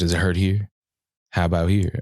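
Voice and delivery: put-on soothing whisper. Retelling a massage therapist checking for pain, imitating a soothing whisper. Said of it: "whisper audio love into my ear".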